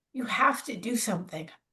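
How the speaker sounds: said softly and with kindness.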